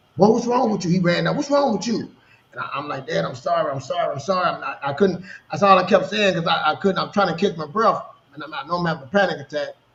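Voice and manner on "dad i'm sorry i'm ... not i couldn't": acted crying, slower. Speaker retells apologizing to his dad during a panic attack, imitating crying. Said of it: "I'm crying".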